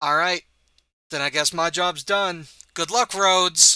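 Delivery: faintly machine-like, slightly mechanized robotic voice. Voicing an armor-clad giant wizard leaving a fight: slightly mechanized voice. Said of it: "in a slightly mechanized voice".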